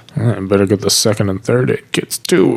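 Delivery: muttered under breath. Describing a scene, the hero walks away to get the first aid kit, mumbling under his breath. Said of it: "he mumbles under his breath".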